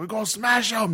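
high, growly British scream. Recalling playing a Luddite, screaming to a group of guys: growly British-accent scream. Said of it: "scream in this like growly like British accent".

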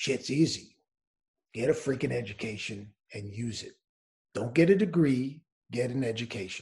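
gruff, low, really deep voice. Quoting a coach's advice on education, imitating a really deep voice. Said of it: "he's got this really deep voice".

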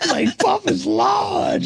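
high, slow shout through laughter.

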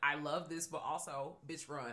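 ordinary talk

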